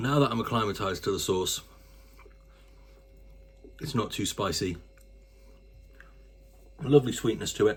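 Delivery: speaking with a mouthful, chewing while talking. Speaker tasting saucy wingies, speaking with a mouthful. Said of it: "speaking with a mouthful".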